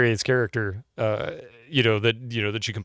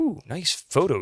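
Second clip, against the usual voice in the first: pitched-up, mocking, sarcastic tone; 7 semitones higher than usual. As the purser looking over a passenger's passport, sarcastic. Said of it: "he says sarcastically".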